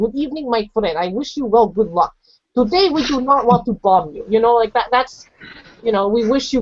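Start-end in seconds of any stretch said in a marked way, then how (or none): none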